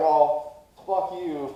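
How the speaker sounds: mock yelling. Telling a story about a man yelling from a bus, retelling yelling back. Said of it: "flipping him off and yelling at him".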